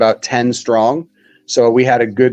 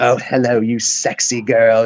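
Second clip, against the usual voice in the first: put-on British accent, slowly. Retelling how a friend answered the phone: imitating a friend's British accent. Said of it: "in his, like, British accent".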